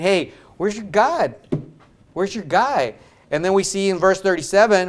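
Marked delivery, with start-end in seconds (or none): 0.0-2.9 derisive, jeering, mocking tone. Retelling Elijah taunting the four hundred fifty: imitating Elijah mocking. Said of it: "here's Elijah mocking".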